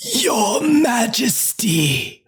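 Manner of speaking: high menacing dark lord voice. After offering your impersonation to a willing listener, give a Margaret Thatcher impression sounding like Voldemort. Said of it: "that sounded like Voldemort".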